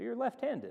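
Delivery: flat statement ending in rising tune on left-handed. Explaining inflection, the speaker demonstrates a statement said as a question. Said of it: "you understand from my tone of voice".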